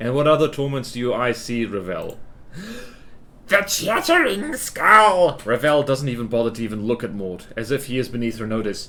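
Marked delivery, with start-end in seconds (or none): 3.5-5.4 hammed-up, put-on witchy crone voice. Acting a scene, the speaker questions another character in a crone voice. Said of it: "Is my crone voice".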